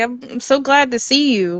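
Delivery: play-acted, thrilled, excited tone. Retelling greeting a student who tapped from behind: imitating own excited greeting. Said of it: "And I get so excited".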